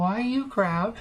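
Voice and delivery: very high, tiny little monkey creature voice. In a game, a creature being handed off speaks up: small monkey voice. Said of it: "you hear a little voice".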